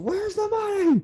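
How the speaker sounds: very high-pitched, demanding scream. Describing a scene, acting out the man's demand to the woman: retelling a scream. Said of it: "And he kind of screams".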